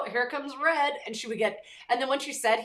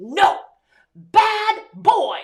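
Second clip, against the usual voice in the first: put-on high, very loud little girl toddler yell; 9 semitones higher, 12 dB louder than usual. Retelling how a little girl marched up to a bigger boy, imitating Avila yelling. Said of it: "she's yelling at him".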